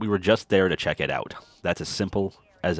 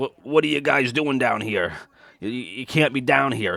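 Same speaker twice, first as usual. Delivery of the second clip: put-on drunk cartoon voice, higher pitch; 6 semitones higher, 3 dB louder than usual. Retelling a drunk man who confronted them, imitating drunk Rick from Rick and Morty. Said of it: "he's all drunk".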